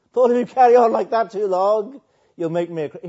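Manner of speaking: very loud, shrill, high mocking jeer. Retelling a man's remark to paul from verse 28, in a mocking tone. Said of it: "He was mocking".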